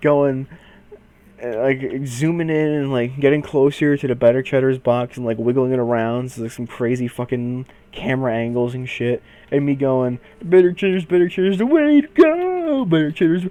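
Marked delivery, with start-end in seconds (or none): 10.4-13.4 high, loud frog-puppet voice, stretched-out "go". Retelling filming a Better Cheddars box up close: Kermit impression. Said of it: "like in that voice".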